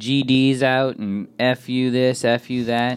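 put-on woman's scream, very slow and stretched out. Telling about a lady in a van cursing while driving; imitating her screaming. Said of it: "just screaming, like yelling".

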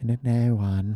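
quiet, eerie, soft, hushed little cartoon voice, breathed out. Repeating an answer on a co-host's request, in a Salad Fingers voice. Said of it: "say it in your best salad fingery voice".

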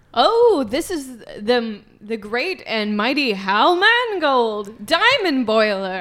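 lofty, haughty, snooty, self-important tone. Introducing a companion to strangers who asked who they are: snooty voice. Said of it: "I speak a little bit more snooty".

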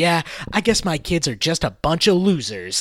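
mock, heavy, dripping, swooping sarcasm. Retelling a movie coach talking to another coach, in a mock-sarcastic tone. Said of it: "he says it in a very sarcastic tone".

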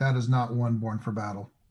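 ordinary talk, nothing marked

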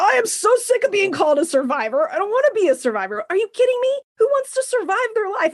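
shrill, very high, exasperated and fed-up ranting tirade. Speaker rejecting being called a survivor, ranting. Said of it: "I just went on a rant".

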